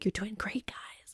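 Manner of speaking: creepy, very quiet whisper. Retelling whispering to the accountability group halfway through the timer, creepy whisper. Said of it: "creepily whispering to them like halfway through".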